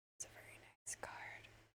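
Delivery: hushed whisper. Commenting on a card just found while opening cards, whispering. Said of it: "Sorry, I keep whispering".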